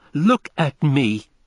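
loud, furious outcry. A woman retorts to a man who doubts her, crying out furiously. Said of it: "she cried furiously".

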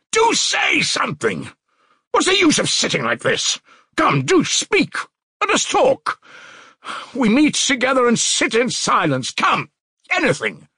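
very high, insistent, urgent shouting outburst. A man sitting among silent companions suddenly demands they talk, shouting. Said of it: "he shouted suddenly".

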